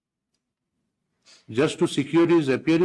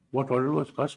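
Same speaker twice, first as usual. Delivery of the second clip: usual speaking voice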